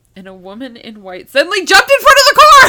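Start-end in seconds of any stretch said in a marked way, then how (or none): 1.3-2.7 very loud, high-pitched, rising, sudden shout. Telling the story of Mary jumping in front of a car, yelling. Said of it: "stop yelling".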